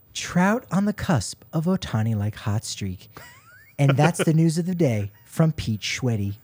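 calm public radio announcer voice. Reading out the sports news of the day as a bit, in NPR announcer voice. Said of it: "if you read it in the NPR voice".

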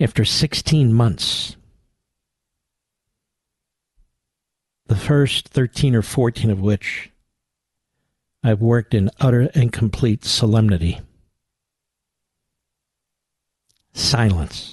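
hushed voice. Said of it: "So I will whisper it".

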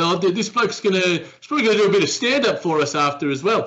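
put-on New Zealand accent. Retelling what a man said while someone hovered over his conversation, in a not-so-good Kiwi accent. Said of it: "That's not the best Kiwi accent I've ever done".

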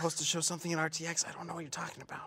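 whispered speech. Pretending not to know about an event at RTX: whispering. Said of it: "Keep whispering so that the audience can hear".

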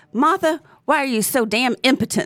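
put-on annoyed, irritated fatherly scolding voice. Retelling how a dad scolded in front of a friend: imitating an irritated dad. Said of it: "he got really irritated with me".

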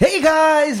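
very high-pitched vlogger voice. Mocking how the other speaker greets viewers on their vlog channel: imitating a vlogger's greeting. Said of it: "the way you guys do your channels".

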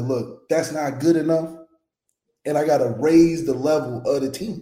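usual speaking voice

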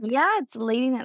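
normal talking voice

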